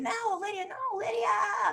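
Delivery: put-on acted, very high, stretched-out child's shriek. A parent describing the kids screaming at each other, imitating a child screaming. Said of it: "She's screaming".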